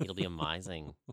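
put-on low-pitched, lilting Australian accent. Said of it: "which is my Australian accent".

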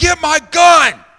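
very loud, shrill, high-pitched yelling. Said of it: "I yell, yell up to Danielle".

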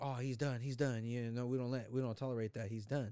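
ordinary delivery

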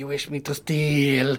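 dreadful, terrible, slow creature voice. Voicing a tiny creature speaking inside a player's head: terrible voice in your head. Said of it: "you hear his sort of terrible voice in the back of your head".

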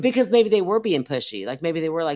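ordinary talk

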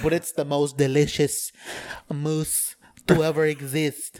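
loud, fancy put-on French chef accent. Pitching a dessert that looks like a turd, in a french chef voice. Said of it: "Is that your chef voice?".

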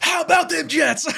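high, fired-up shout. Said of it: "I'm, like, all fired up".

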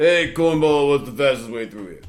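tough, revved-up put-on Italian accent, street-racer style. Voicing his racing character, he asks a fisherman for directions: Machine Gun Joe Viterbo voice. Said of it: "make me sound Italian and car-ish".

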